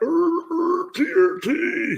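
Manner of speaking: very high, bad barking seal noise. Describing a random TRT comment, a bad seal impression. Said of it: "my bad um, impression".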